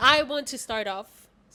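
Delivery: booming, very loud, eager and excited. Starting off after the introductions, very loud excited voice. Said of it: "that was so loud".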